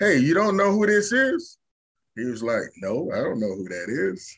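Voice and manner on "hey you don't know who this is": mock playful, joking teasing, pitched up. Retelling what someone jokingly told a young lifter, retelling a joking remark.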